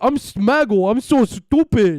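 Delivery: high, loud, slow, dim-witted, stupid-sounding drawl. Mocking a streamer who sounded stupid, with a mocking impression of Smaggle. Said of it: "that's a good impression".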